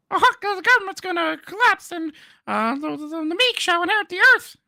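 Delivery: cartoon squeak, pushed to very high pitch. Asked by a co-speaker to repeat the line, Mickey Mouse voice. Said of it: "Can you do that in the Mickey voice".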